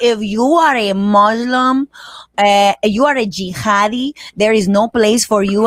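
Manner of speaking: slow, put-on Puerto Rican accent. Imitating a woman who starts her videos with an incredible accent. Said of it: "with the most incredible accent".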